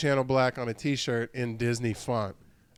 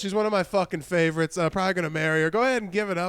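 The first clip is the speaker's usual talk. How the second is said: stage announcer voice, pitched up; 6 semitones higher than usual. Joking about doing the PA at own wedding: headliner introducing their opener. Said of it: "like a headliner who does the, uh, who does the P A for their opener".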